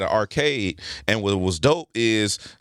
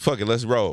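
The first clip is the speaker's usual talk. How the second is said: ordinary delivery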